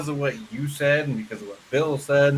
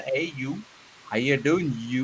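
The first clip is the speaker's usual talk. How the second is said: Upper Peninsula Yooper accent. Arguing about Midwest state accents, demonstrating the Yooper accent. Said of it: "The Youpers got their own fucking talk".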